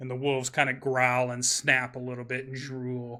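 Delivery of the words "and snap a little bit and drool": ordinary delivery, nothing marked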